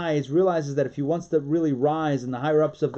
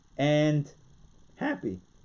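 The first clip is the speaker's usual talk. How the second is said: voice cracking in the middle of "happy". Speaking to an audience about holding the Seder, voice cracking. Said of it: "Sorry, my voice cracked".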